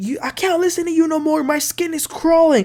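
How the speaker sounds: mock, high-pitched, fed-up angry rant. Recapping an episode, acting out a man going off on the phone, imitating an angry rant. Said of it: "He was going off and he says".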